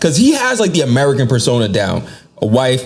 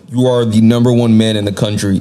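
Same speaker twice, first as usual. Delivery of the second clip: ordinary talk, nothing marked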